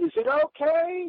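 mock, shouted out loudly. Speaker retells calling out from the plane bathroom window: retelling a yell. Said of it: "and I yelled".

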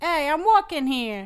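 loud, slow, put-on New York Italian street accent. Asked to do a Boston accent, giving a try: New York Italian accent. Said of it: "That is a specific kind of New Yorker".

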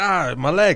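high, tearful whimper like a little kid, acted. Retelling a hospital story, imitating a crying kid. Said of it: "crying. He's like".

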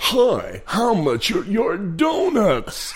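high, slow, stretched-out presenter voice. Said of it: "[name]".

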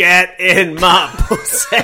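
booming, slow, drawn-out character voice. Retelling what his girlfriend said to him one evening, in the Fat Bastard voice. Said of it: "in the Fat Bastard voice".

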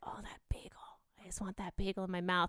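sultry, seductive, come-hither, wanting voice. Retelling her own reaction to a bagel: imitating her own seductive voice. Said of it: "Went from so seductive".

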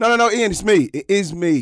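booming, very high, very loud, slow drawn-out voice. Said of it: "in his [name] voice".

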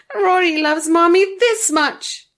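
very high, loud, rapturous, gleeful delight. Rory answers Imogen, his mommy, with glee. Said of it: "he said with glee".

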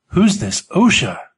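with a gasp. An old-timer at the back of a factory cafeteria asks a question, gasping. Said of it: "An old-timer near the back gasped".

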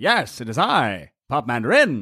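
put-on vintage, old-time radio broadcast announcer voice. Introducing himself during a playful group bit, in an old-time radio voice. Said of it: "Old time radio voice".

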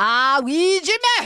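put-on Scottish-accented voice. Running through accents, the speaker tries another: Scottish accent. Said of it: "and what about Scottish?".

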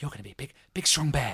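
soft, hushed whisper. Retelling a mother bear whispering to her belly during pregnancy, whispering. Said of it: "She's like whispering to her tom saying".

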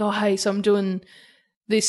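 ordinary delivery

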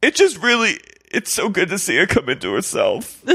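mock weepy crying voice, very high and swooping. Retelling what a weeping woman said to a teacher: imitating someone crying. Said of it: "She's crying".

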